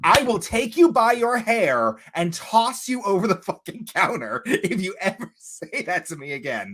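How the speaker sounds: high, outraged, appalled, scandalized tone. Retelling a reply to a coworker's remark: imitating own scandalized threat. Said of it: "I was so scandalized".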